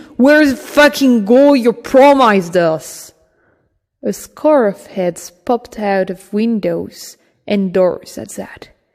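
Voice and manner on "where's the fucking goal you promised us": furious, spitting-mad, loud raised shout. Reading a story, a man strangling another confronts him, spitting mad. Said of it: "[name], he's strangling the fat one. / and spitting mad".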